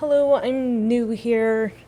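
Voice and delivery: high, slow, put-on feminine voice. Walking up to two ladies, speaking in a put-on feminine voice. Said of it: "I'll kind of do like a more like feminine voice".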